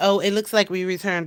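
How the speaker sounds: usual speaking voice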